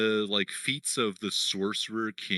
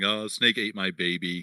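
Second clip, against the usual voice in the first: ordinary delivery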